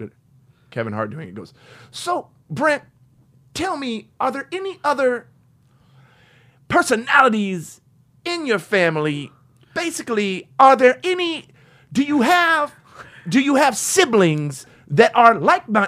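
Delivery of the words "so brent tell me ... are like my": very high, loud, slow, drawn-out, halting delivery. Imitating Kevin Hart asking a podcast guest about siblings: imitating Kevin Hart. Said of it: "is that Kevin Hart doing a William Shatner impression?".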